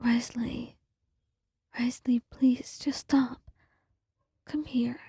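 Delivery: soft, almost whispered delivery. Calling to someone slumped against a wall after a fight, soft, almost a whisper. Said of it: "A new soft voice, almost akin to a whisper".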